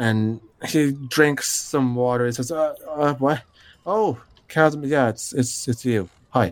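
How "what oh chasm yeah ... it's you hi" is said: pained, halting, stumbling voice. Voicing a blacksmith rubbing his temples, just woken: character with a throbbing headache. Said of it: "rubbing his temples as he comes to the front".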